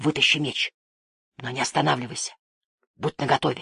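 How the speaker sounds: under the breath. A man answers his companion's warning touch, whispered. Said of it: "прошептал тот".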